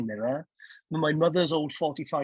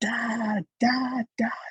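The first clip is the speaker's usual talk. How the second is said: acted scream at top of voice, much higher; 7 semitones higher than usual. Recounting a Christmas Eve morning, the speaker reenacts calling to their dad; retelling a scream. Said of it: "I screamed at the top of my voice".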